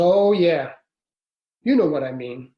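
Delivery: put-on Louisiana accent kept up throughout. Retelling what a man said to him, the speaker quotes him in his accent. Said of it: "So in this accent, he said".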